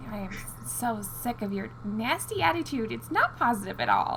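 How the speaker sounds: grumpy, slow grumble muttered under the breath. Playing a character turning someone away, grumbling under breath. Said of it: "grumbling under my breath".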